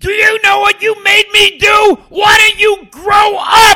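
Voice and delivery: very loud, shrill, screaming tirade. Retelling a man screaming at them over the phone, retelling a scream. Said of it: "Now screaming".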